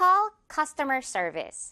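very slow, careful delivery with stress on "cus".

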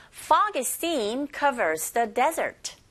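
very slow, careful, deliberate model reading.

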